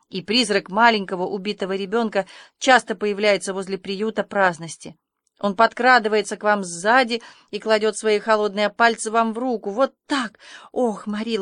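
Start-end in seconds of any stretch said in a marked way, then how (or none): none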